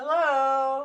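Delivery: high, loud yelled delivery.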